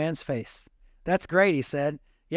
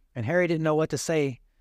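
normal talking voice

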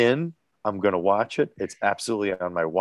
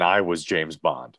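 ordinary delivery

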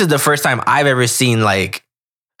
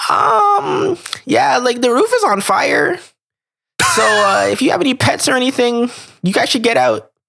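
put-on nerdy voice, much higher; 12 semitones higher than usual. Retelling what a guy knocking at the door said, in a nerdy voice. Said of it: "in the most nerdy voice ever".

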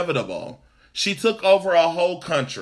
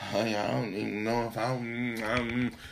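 put-on low, soft old woman mumble. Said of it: "What's these mumbles?".

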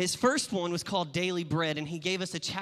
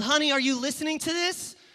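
acted, very high, loud yell; 9 semitones higher, 5 dB louder than usual. Retelling a joke where the wife calls to her husband: imitating a wife yelling.

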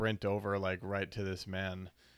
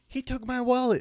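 frantic cry of alarm, very high and loud; 7 dB louder than usual. Retelling a woman yelling in the background: imitating a frantic yell. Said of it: "yelling in the background frantically".

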